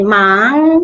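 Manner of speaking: drawn-out rising tone on mang. Moving on to tone number two: rising tone on mang. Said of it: "yang naik dari tiga naik ke atas, jadi misol gitu naik ya".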